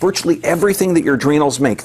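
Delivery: ordinary talk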